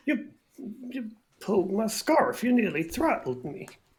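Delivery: crying in character. Playing a brigand blaming the heroes for his scarf being pulled: crying in character. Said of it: "Why are you crying?".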